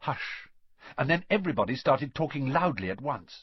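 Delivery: ordinary delivery, nothing marked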